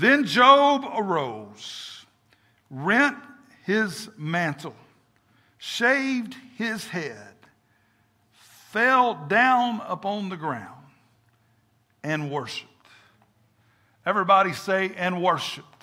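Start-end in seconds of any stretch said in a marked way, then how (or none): 0.0-12.7 very slow, deliberate, with the word arose stretched out. A speaker reads a scripture verse aloud to listeners, reading a little slower. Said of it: "I'm going to read it a little slower".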